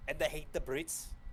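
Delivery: high, laid-on mock Scottish accent.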